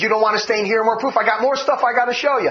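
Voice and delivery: ordinary delivery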